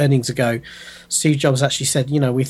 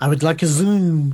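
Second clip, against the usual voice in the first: heavily exaggerated French accent; 3 semitones higher than usual. Pronouncing Zoom like Inspector Clouseau, exaggerated French Clouseau accent. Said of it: "You end up pronouncing it like Inspector Clouseau".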